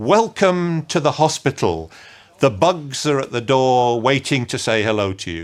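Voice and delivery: very dramatic, flamboyant, grand theatrical delivery. Recalling how a flamboyant presenter always opened, imitating a very dramatic opening. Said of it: "in a very dramatic way".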